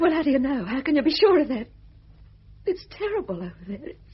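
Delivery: tearful weeping while speaking. Speaking to Fred, who says nothing will happen to him, crying. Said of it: "I didn't mean to cry".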